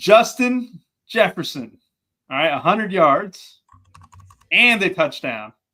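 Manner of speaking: careful, spaced-out delivery. The speaker dictates to Tony, who has to type it in, speaking slowly. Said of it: "I'll speak slow for you".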